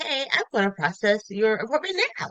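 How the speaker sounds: slightly off, uncanny, artificial customer-service receptionist voice. Retelling a call to a car dealership: imitating an AI receptionist. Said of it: "nobody's talking like that".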